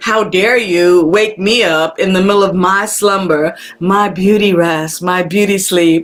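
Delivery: plain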